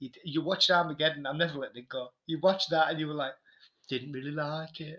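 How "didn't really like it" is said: mocking put-on voice, slower. Repeating what the other speaker said after watching Armageddon, in a mocking imitation. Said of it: "you obviously love doing that voice".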